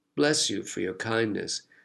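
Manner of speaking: ordinary delivery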